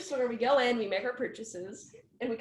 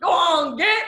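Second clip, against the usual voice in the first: mock yelling voice; 5 semitones higher, 12 dB louder than usual. Retelling how the owner shouted at a man running away, retelling a yell. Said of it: "He's like yelling".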